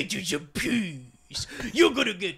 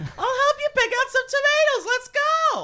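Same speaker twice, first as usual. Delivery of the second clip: put-on sing-song voice, higher and louder; 5 dB louder than usual. Doing an impression for the others: Lee impression. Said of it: "And then she's like".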